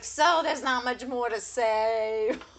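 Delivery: slow, labored, high, loud Boston drawl. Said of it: "working so hard to fucking get every sentence out".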